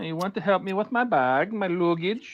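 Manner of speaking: put-on Swedish accent. Recalling Jamie Lee Curtis as the Swedish girl, in a mock Swedish accent. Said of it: "Jamie Lee Curtis being the Swedish girl".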